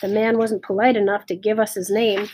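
plain

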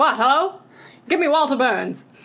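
put-on high-pitched old-Hollywood transatlantic accent. Acting out how she talks into an old phone: transatlantic accent. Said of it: "like the transatlantic".

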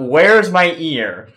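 put-on all-out yell at top volume. Retelling shouting during a late-night game: imitating a loud shout. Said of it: "the loudest voice I can, I shout".

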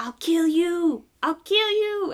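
very high, loud, slow, shrieking villain voice. Describing a movie plot where he plays the villain, Andy Richter villain impression. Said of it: "the villain".

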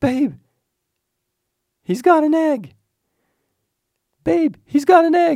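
very high, very loud, shrill excited shriek. Retelling what a man suddenly screamed, imitating an excited high scream. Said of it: "when he gets excited or well excited his his voice goes high".

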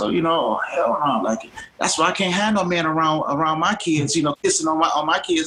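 put-on heated, angry, complaining rant. Retelling what a woman in a grocery store said: imitating a woman ranting. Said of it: "she starts ranting, and she says".

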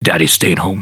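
weirdly sexual, suggestive delivery. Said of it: "he says in a weirdly sexual way".

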